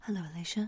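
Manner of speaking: eerie, unsettling, creepy put-on voice. Demonstrating a recorded phone message in a creepy voice. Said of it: "I'm just leaving a phone message for you in a creepy voice".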